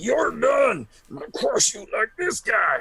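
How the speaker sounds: very high, flipped-out raging fury. Voicing a grieving warrior flipping out over a body: Kronk flipping out in rage. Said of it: "flipping out of it".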